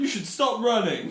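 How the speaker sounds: very high, very loud, shrill shouted yell. Recounting a scene, the speaker acts out a man yelling at someone on fire: retelling a yell. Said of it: "he yells at them".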